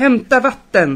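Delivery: loud, commanding shout calling out. A man takes charge of the crowd at a fire, shouting.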